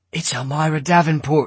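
stage whisper. Peterson tells the man next to him: loud whisper. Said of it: "Peterson said in a loud whisper".

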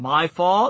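ordinary delivery

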